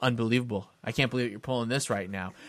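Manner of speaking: mock-serious voice. Retelling a man's claim over twenty bucks, retelling him getting real serious. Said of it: "he started getting real serious".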